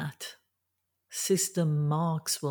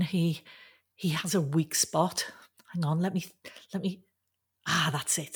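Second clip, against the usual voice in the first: ordinary delivery, nothing marked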